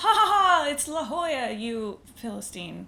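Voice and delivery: loud, high, snobby, extra rude mock laugh.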